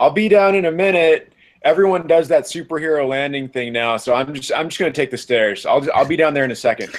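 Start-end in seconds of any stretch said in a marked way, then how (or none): 0.0-1.3 high, loud yell calling downward. Playing a character waving down from the top: yelling down from above. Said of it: "and yells".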